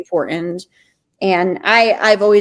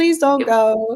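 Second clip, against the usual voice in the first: fake tearful crying with a pleading tone; 4 semitones higher than usual. Acting out begging others to stay at the end: mock crying at end of camp. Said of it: "like the end of camp crying".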